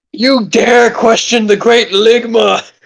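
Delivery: put-on grand, lofty, godlike deity voice. During a roleplay moment, acting like a god. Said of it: "I'm acting like a".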